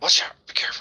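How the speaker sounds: hushed, breathy, cautious whisper. A game master voices a whisper from a basket warning the party, whispered warning. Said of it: "you definitely hear this like a whisper".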